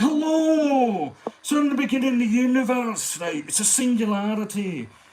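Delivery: heavy Glaswegian, stretched hello. Imagining a celebrity reading a science book aloud: Billy Connolly impression. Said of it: "Billy Connolly reading Brief History of Time".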